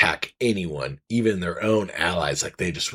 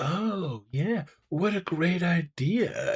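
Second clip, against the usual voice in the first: very high, very slow, drawn-out sycophantic gushing; 11 semitones higher, 4 dB quieter than usual. Retelling the other man's reply in the book: mock fawning agreement. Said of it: "And the guy's like".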